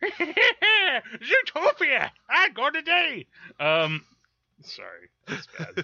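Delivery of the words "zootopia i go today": put-on old prospector voice, much higher pitch. Joking about sounding like an old man, doing an old prospector voice. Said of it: "old prospector".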